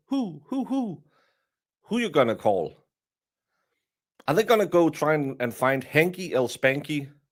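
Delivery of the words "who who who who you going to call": each word hooted high like an owl. Speaker discussing lawyers conflicted out of a case, owl-like hooting 'who'. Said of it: "I'm going to sound like an owl".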